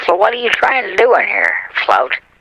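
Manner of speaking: put-on granny voice. After boasting he can sound like your grandma, calling to Float in an old grandma voice. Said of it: "I can sound uh, exactly like your grandma".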